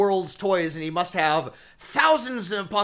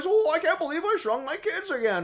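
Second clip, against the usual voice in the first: very high, nasal, nerdy voice; 9 semitones higher, 3 dB quieter than usual. Recalling his voice in Honey, I Shrunk the Kids, do a Rick Moranis impression. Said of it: "he has like a very specific voice".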